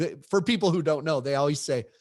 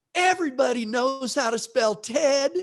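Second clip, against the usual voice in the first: play-acted shrill, very high, full-lung little kid holler; 10 semitones higher, 4 dB louder than usual. Retelling how a kid in an autograph line answered: imitating a kid shouting. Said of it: "as loud as he could say".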